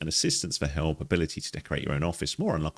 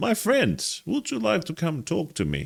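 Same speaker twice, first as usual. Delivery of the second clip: slight put-on Russian accent, pitched very high; 13 semitones higher than usual. As a therapist inviting a friend to come and talk, use a slight Russian accent. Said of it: "I've gone with interesting slight Russian accent".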